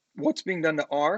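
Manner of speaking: voice cracking and breaking. Explaining how to solve an equation for r, voice cracking. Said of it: "I have a little voice crack right there".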